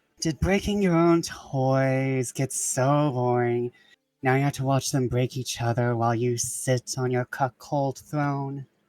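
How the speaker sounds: whispering. A character leans over to a bigger man, not wanting to attract attention: whispering. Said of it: "He'll like lean over and whisper".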